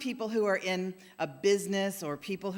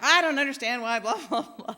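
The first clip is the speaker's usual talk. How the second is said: acted, raised, pitched-up grumbling, complaining voice; 5 semitones higher, 6 dB louder than usual. Retelling a churchgoer grumbling in the hallway: imitating someone complaining. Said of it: "complaining in the hallway to somebody".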